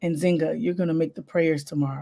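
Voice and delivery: whispering voice. Retelling what the priest whispered to the speaker, retelling a whisper. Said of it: "He whispers to me".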